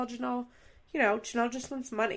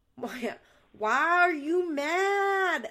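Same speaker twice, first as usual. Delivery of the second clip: put-on slow, drawn-out Southern drawl; 6 semitones higher than usual. Imitating Janelle from the show, slow Southern voice. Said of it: "She's talking so slowly".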